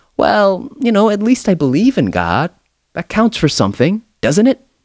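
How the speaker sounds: meek, high-pitched pleading tone.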